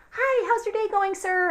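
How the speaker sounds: very high, bubbly, chirpy voice. Retelling how a distracted cashier greeted a customer: imitating a bubbly cashier. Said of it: "she's all bubbly and like".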